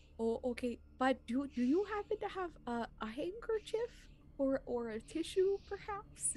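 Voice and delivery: put-on whispering in a teeny tiny hushed voice. A player's character taps a parent's shoulder so as not to bother anyone, teeny tiny whisper. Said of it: "whispering in, like, a teeny tiny voice".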